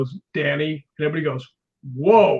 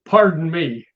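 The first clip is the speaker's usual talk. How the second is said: rough, gruff-sounding tough-guy voice. Retelling what someone right over his shoulder said to him, in a gruff voice. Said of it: "in a gruff voice".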